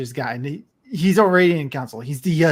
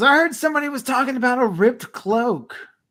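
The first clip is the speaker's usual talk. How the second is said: very loud, high-pitched, barging-in call; 8 semitones higher than usual. A game narrator voices a nineteen-year-old stumbling into an inn; very loud. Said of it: "very loudly goes".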